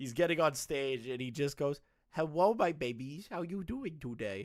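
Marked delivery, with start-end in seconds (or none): 2.1-4.5 put-on baby talk. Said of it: "he just starts baby talking".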